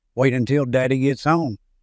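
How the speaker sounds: ordinary talk, nothing marked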